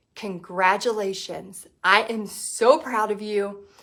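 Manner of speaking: low voice, deliberately brought down. The speaker shows what they say once someone has done it: lowered voice. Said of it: "I lower my voice".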